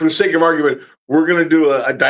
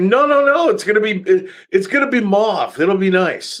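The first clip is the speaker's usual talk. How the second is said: openly sarcastic; 4 semitones higher than usual. Retelling what gets said to a client: imitating own sarcastic reply. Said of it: "my sarcasm will always come out".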